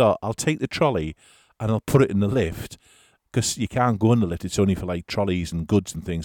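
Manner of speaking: ordinary talk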